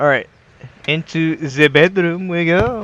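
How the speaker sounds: terrible mock French accent. Trying to open a locked trunk on camera, terrible French impersonation. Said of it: "that was my terrible French impersonation".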